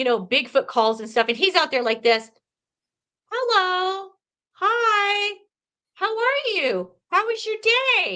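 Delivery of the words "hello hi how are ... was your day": mock very high, very slow, sweet, calm, gentle voice. Retelling how Lee talks to them: imitating Lee talking sweetly and calmly. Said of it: "talk to them so sweetly and calmly".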